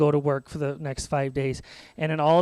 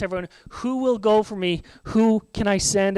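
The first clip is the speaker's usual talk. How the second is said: loud, higher calling-out voice; 5 semitones higher than usual. Retelling a Bible story, God calls out to everyone: loud calling voice. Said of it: "God calls out in a loud voice".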